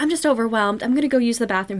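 normal talking voice

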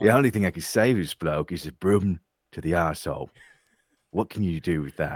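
seedy British underworld movie-star voice. Joking with others about a movie scene, in an underworld perverted Michael Caine voice. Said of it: "like this bizarre, like, underworld perverted".

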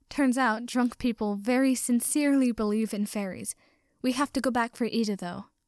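ordinary delivery, nothing marked

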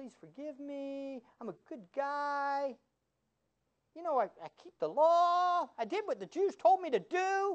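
insincere, put-on pleading, sarcasm laid on. Acting out a defense speech as a joke: sarcastic put-on plea. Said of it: "I'm being sarcastic again".

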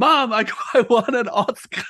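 mock very slow, high, tearful, holding back tears. Retelling an award winner's acceptance speech: imitating someone holding back tears. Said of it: "holding back tears and he's like".

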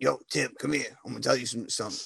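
rasping, laid-back, rough-edged call. Retelling what an old coworker would say: imitating a raspy-voiced coworker. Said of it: "but with a raspy voice".

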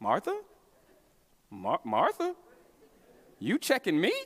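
put-on calm, even tone. Imagining Jesus correcting Martha, the speaker performs it: calm correcting Jesus voice. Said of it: "He has his calm two fingers".

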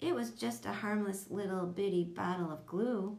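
ordinary talk

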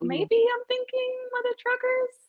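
voice pushed up very high. Naming a favorite pair while half decided, high-pitched voice. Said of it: "I say it in a high-pitched voice".

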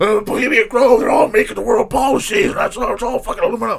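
very high, ranting voice. Retelling what a conspiracy talker said about bohemian grove: imitating a conspiracy theorist. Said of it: "That's a pretty good impression".

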